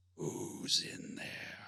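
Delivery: whispered, hushed, guttural ghostly voice. Narrating a story, a voice calls out to the man at the door: guttural voice. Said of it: "A guttural voice, like words on the wind".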